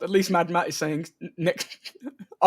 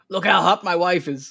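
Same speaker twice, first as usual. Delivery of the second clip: put-on American accent; 4 dB louder than usual. Speaker quotes her husband showing her off, in an American accent as Paul W. Anderson. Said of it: "I don't know why I'm giving him an American accent".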